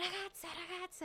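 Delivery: put-on boy voice, high, loud shout. Retelling how a boy in a restaurant called out: imitating a boy shouting. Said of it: "começou a gritar".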